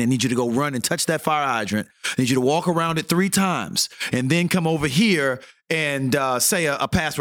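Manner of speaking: ordinary talk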